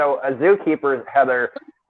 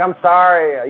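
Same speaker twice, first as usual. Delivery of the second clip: humble, small, pleading, begging, apologetic voice; 4 semitones higher, 4 dB louder than usual. Retelling an apology to a partner the next morning: retelling own begging. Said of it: "I did a little begging".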